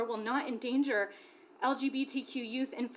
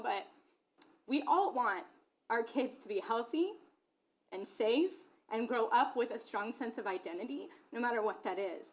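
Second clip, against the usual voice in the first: emotional, halting, choked-up, catching voice. Speaker apologizes to the listeners, then continues while getting emotional. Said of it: "I'm sorry I'm getting emotional".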